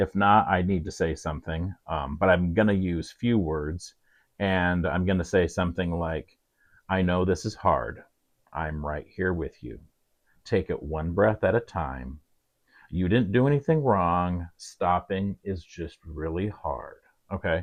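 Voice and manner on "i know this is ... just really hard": quiet, slow, soft, calm, grounded, gentle reassuring tone. Demonstrating what to say to someone finding it hard to stop, quiet, slow, reassuring. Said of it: "you're going to say this quiet, slow".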